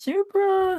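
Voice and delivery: voice going way too high, sudden high squeak. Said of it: "I do not know why my voice went that high".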